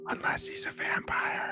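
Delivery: leaned-in, very soft, hushed, breathy whisper. Speaking in character while leaning over to someone: whispering. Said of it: "I lean over and I whisper".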